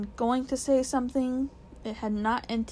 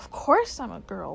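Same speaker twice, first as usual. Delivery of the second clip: ordinary delivery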